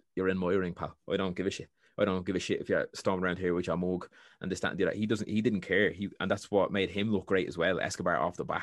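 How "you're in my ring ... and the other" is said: ordinary talk, nothing marked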